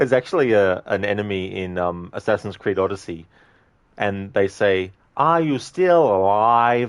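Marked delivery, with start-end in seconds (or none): 5.1-6.9 odd, loud, slow, drawn-out delivery. Showing how an enemy in Assassin's Creed Odyssey says its line, in a Tommy Wiseau-like voice. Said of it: "they say it like that, and it always makes me think of Tommy Wiseau".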